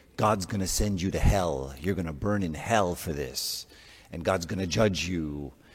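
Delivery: put-on, really angry voice. Acting out someone threatening you with God's judgment, imitating a really angry voice. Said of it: "with a really angry voice".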